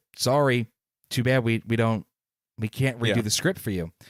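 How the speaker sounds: ordinary delivery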